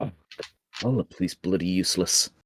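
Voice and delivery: low mutter under the breath, to oneself. A player's character wanders over to the drunk and mutters under his breath. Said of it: "I kind of mutter under my breath".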